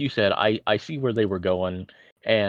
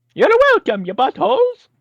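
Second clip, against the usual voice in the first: terrible fake Italian accent, shrill, loud, swooping, belted; 9 dB louder than usual. After the host thanks Mario on the show, replying as him, bad Mario impression. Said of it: "that was a terrible Italian accent".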